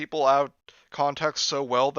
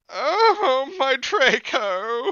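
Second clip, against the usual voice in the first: high-pitched moan; 10 semitones higher, 3 dB louder than usual. Told to moan a vampire's line from the story, the reader delivers it: moaning voice. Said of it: "the best I can moan in that voice".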